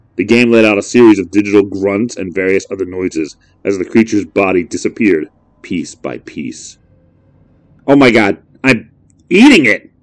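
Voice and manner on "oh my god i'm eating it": high, sickened cry of disgust. A player watches his game character eat a dead creature, crying out, sickened. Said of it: "he cried, almost sickened".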